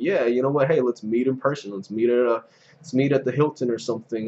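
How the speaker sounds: normal talking voice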